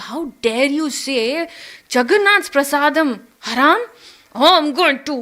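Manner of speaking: heated, offended, angry, indignant outburst. Retelling a story, a man refuses temple food: retelling an angry outburst. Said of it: "He got really angry".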